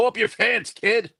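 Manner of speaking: very high-pitched put-on old man voice. Joking about a wrestler's underwear showing: put-on old man voice. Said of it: "I didn't wanna sound like an old man".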